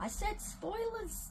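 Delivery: high-pitched, put-on bad Australian accent. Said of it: "I'm trying to do an Australian accent".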